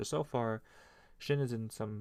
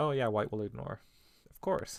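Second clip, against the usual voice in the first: dry, ironic, sarcastic, knowing agreement; 4 dB louder than usual. Retelling own reaction to watching a game live: imitating own sarcastic remark. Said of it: "I sarcastically was like".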